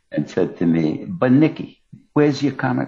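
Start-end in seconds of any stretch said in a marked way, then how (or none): 1.0-2.8 pitched-up, sweet Italian mother voice. Retelling what his Italian mother asked him at home: imitating his Italian mother. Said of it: "I wish you could see my hands as I imitate her".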